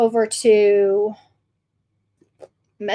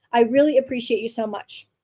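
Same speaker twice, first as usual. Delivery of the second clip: ordinary delivery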